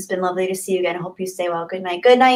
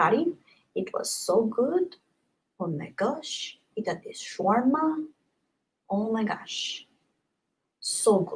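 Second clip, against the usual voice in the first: Middle Eastern-accented speech; 2 semitones higher, 9 dB quieter than usual. Speaker recalling the best gyro they ever had, put-on Middle Eastern accent. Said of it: "I'm doing a Middle Eastern accent".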